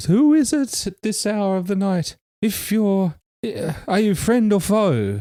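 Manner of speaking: very high voice broken by sobs. Someone behind a door answers a knock from travellers at night, sobbing while talking. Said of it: "the sobbing between sobs".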